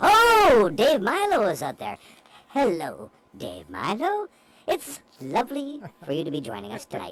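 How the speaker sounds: put-on elf character voice. Asked to use the elf voice to greet a listener: elf voice. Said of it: "Your elf voice to say hello to Dave Milo".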